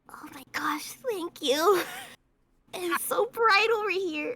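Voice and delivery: soft, quiet, small penguin voice. Voicing a penguin character thanking another penguin: quietly, as a penguin. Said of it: "quietly go".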